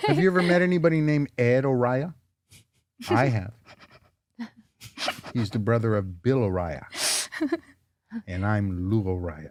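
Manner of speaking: unsettling, creepy, very deep and soft tone. Acting out a joke about meeting someone, in a creepy tone. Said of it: "When you talk in that tone, That tone makes you creepy".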